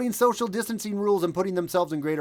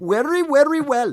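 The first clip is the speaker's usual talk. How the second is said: high, loud, mock Indian accent. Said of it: "unless Indian".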